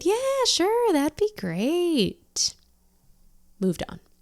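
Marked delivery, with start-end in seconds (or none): 0.0-2.5 voice jumping very high, swooping and drawn out. Speaker retells answering at work while covering up doubts; retelling own raised-pitch reply. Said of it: "I raised my voice up a couple octaves".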